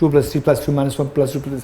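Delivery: very fast, rattled off at top speed. Showing how a calculation question sounds when said very fast. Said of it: "When I do it very fast".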